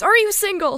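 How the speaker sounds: mock, sudden, loud, high blurted shout. Retelling a man who chased them down the street: imitating a man shouting. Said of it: "he just shouts".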